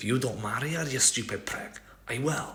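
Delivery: put-on Scottish accent. Speaker imagining Cassian's spirit speaking during a battle scene, Cassian in Scottish accent. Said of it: "from the Highlands".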